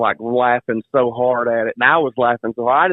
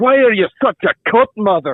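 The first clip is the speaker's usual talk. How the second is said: very high, silly, cartoonish character voice; 9 semitones higher, 4 dB louder than usual. Retelling what he said to his mother, doing the Shrek, Fat Bastard voice. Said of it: "I was doing the Shrek voice, like the fat bastard voice".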